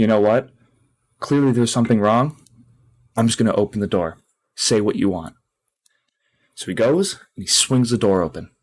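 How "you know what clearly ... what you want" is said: normal talking voice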